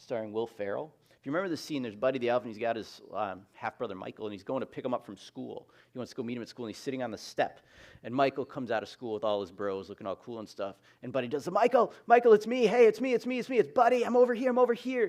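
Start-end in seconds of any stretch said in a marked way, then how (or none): 11.5-15.1 put-on excited yell, higher and louder. Retelling a movie scene of calling out to a half-brother, Buddy the Elf yelling. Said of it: "Buddy kept yelling and yelling and yelling".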